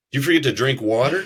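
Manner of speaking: put-on sarcastic mockery. Retelling how recovery staff questioned someone who was late: imitating sarcastic staff. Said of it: "there is an incredible amount of sarcasm".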